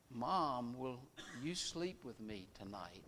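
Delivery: hushed, very quiet, quavering, trembling voice. Telling a joke, the speaker quotes a son asking his mother; imitating a trembling voice. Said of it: "in a trembling voice said".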